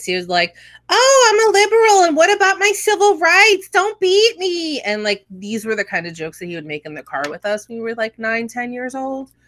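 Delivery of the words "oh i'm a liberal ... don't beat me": loud, mocking, very high put-on falsetto. Recalling a father mocking civil rights advocates, imitating a mocking falsetto. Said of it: "he would literally go up into a falsetto voice".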